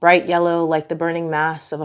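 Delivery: ordinary delivery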